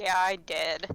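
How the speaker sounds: sounding disappointed. Admitting to another player that coin was found: sounding disappointed. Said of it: "why do you sound disappointed".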